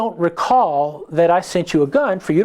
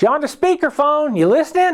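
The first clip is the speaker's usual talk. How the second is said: little squeaky voice, much higher; 10 semitones higher than usual. Retelling a phone call about his custom gun, imitating Bill's squeaky voice. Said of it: "he's like this little squeaky voice".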